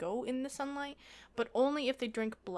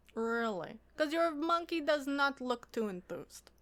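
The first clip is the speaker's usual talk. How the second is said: put-on, approximate Eastern European accent; 4 semitones higher than usual. Voicing a character who answers an offer of a deal, kind of Eastern European accent. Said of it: "I'm going for kind of an Eastern European thing".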